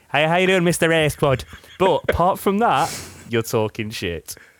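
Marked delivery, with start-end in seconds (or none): 0.1-1.4 really bad put-on Irish accent. Speaker arguing with a friend about their most-rewatched pick, doing a really bad Irish accent. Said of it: "I will give you the really bad Irish accents".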